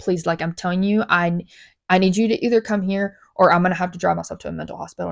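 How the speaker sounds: ordinary delivery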